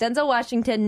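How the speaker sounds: usual speaking voice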